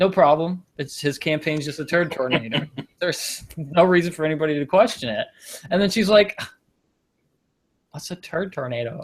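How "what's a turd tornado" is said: soft, put-on Valley girl accent. Retelling what a woman asked in a story, in a Valley girl voice. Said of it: "I don't know why she's a Valley girl now".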